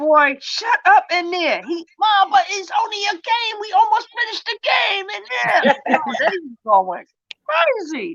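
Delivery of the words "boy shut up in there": exasperated, fed-up holler. A mother re-enacts yelling through the door at her gaming son, retelling yelling. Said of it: "I'm yelling through my door".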